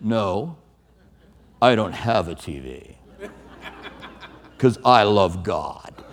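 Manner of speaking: put-on very low, slow, deliberate condescending tone. Speaker retells answering someone who asked about a football game, in a mock-condescending tone. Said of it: "I did have that condescending tone".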